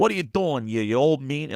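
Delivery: New Yorker way of talking. Trying out accents while recording commentary, in a New York accent. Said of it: "If it's a New Yorker".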